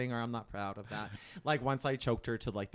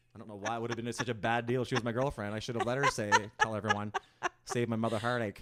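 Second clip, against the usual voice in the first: ordinary talk, nothing marked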